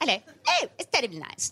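put-on choppy old-movie delivery. Wondering how people talked in old movies, the speaker acts it out, staccato old-film style. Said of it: "Very staccato".

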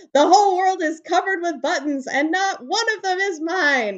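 furious, angry, high-pitched screamed voice. Reading a picture book aloud, an angry character jumping up and down: screaming. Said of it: "He jumped up and down and screamed".

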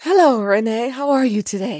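put-on, fake seductive sexy voice. Greeting a co-host at the start of the show: put-on sexy voice. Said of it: "So I gave you my sexy voice".

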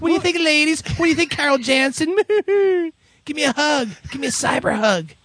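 mock blubbering like a baby. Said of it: "all blubbering like babies".

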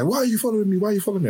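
mock shrieking, very high, repeated scream. Retelling how a woman being followed turned on the man, retelling a scream. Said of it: "she just turned around and screamed at the guy".

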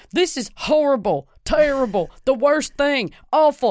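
high yelling rant. Describing a podcast episode: imitating Doctor Phil yelling. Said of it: "Doctor Phil yelling into the microphone going".

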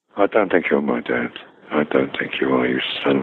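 put-on whisper. Retelling what a fellow actor said in the wings before going on: imitating Erskine whispering. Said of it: "who would whisper before we went on".

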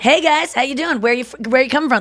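upbeat friendly driver voice. Imitating an Uber driver greeting passengers who get in: imitating a fun Uber driver voice. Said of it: "fun Uber driver voice".

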